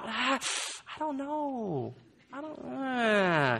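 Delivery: soft, slow, doubtful mumble trailing off.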